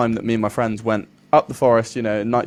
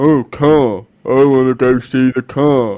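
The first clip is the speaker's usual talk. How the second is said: loud, slow, dim-witted dopey drawl; 2 semitones higher, 7 dB louder than usual. Retelling a friend walking toward the cars: imitating a friend as a dunce. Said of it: "your impression of your friend makes out that he's a complete dunce".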